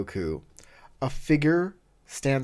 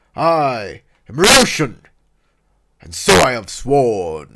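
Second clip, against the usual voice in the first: booming, thunderous voice at full volume; 11 dB louder than usual. Voicing an armored spear guardian who blocks the border: Ryoshin's deep voice. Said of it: "his deep voice causes the rocks to shake".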